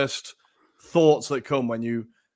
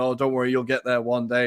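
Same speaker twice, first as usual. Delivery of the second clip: put-on smug tone. Retelling an uncle's dig about supporting Arsenal: imitating a smug tone. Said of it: "kind of rather smugly going".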